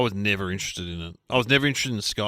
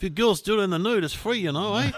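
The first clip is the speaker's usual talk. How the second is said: put-on New Zealand accent, very high-pitched; 10 semitones higher than usual. Retelling what a guy told a young woman and her friends: new zealand accent. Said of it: "That's a great the New Zealand accent".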